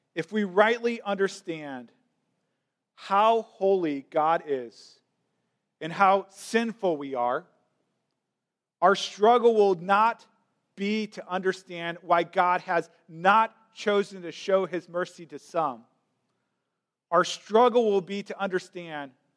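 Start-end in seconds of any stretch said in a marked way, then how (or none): 0.2-15.9 very slow, deliberate, drawn out word by word. Explaining Romans 9 to listeners, say the key sentence very slowly. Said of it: "Let me say this very slowly".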